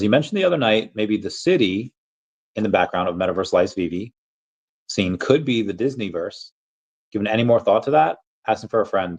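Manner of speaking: usual speaking voice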